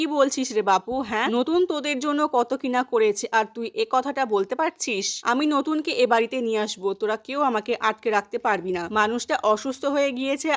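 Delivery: ordinary delivery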